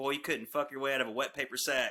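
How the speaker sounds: normal talking voice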